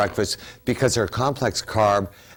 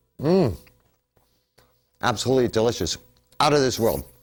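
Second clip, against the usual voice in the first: speaking with food in mouth, chewing. Tasting the oatmeal on air near the end of the show, talking while chewing. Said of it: "Excuse me for chewing".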